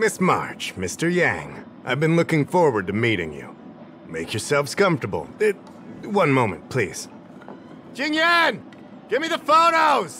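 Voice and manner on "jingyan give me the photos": high-pitched yell. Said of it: "Stop yelling!".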